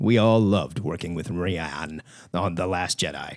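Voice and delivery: very low, deep put-on voice. Reading out a quote from the president of Lucasfilm: Kathleen Kennedy impression. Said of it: "This is what she sounds like".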